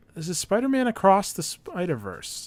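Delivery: voice cracking. Introducing the next movie to talk about, voice cracking. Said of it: "I don't know why my voice cracked there".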